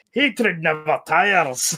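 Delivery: put-on Scottish accent, zealous, fervent proclaiming tone. Quoting a favourite game character's line: Darktide zealot voice. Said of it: "I love his voice".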